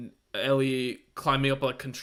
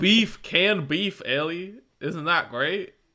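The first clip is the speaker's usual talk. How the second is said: put-on Texas accent, pitched up high; 5 semitones higher, 4 dB louder than usual. Recapping a TV episode, acting out Pedro speaking to Ellie: Pedro impression in Texas accent. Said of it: "why am I doing this accent?".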